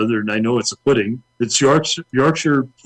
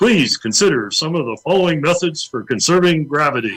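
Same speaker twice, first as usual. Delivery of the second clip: public service announcer voice, higher; 4 semitones higher than usual. Reading a joke public service announcement: public service announcement voice. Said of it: "I'll get my best public service announcement voice in play".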